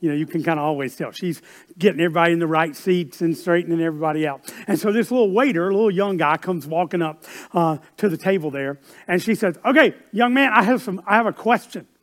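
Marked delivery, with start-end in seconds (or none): 9.6-11.8 put-on New York accent, pitched up. Retelling what a mother at a restaurant told the young waiter: imitating a New York accent. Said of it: "they had that New York accent".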